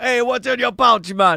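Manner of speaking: put-on, imitated Jamaican accent. Imitating the other Rasta guys who walk up and ask, in a Jamaican accent. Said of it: "In a Jamaican accent".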